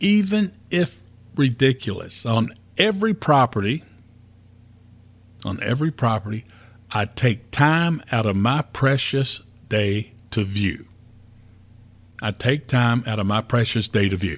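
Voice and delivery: slow, measured, deliberate, spelled-out delivery. Leading listeners through an investor pledge to repeat, saying it kind of slow. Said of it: "I'm going to say this kind of slow".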